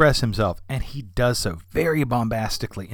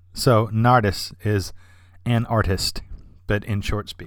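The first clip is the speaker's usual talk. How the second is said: ordinary talk, nothing marked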